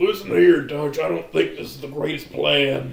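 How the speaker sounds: rough, raspy, creaky character voice. Joking about a fan story's character: Arthur Morgan voice. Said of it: "the Arthur Morgan voice".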